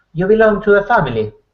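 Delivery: put-on slight English accent. Retelling a scene, quoting the seated man: slight English accent. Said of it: "a little bit of an English accent on him".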